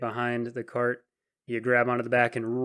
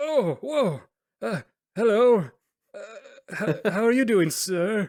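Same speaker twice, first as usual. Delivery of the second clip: very high, slow, halting, startled stammer; 9 semitones higher, 4 dB louder than usual. Voicing an old driver who suddenly notices a passenger behind him: startled old driver. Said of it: "you scared me there for a moment".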